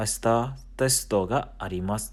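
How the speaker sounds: ordinary delivery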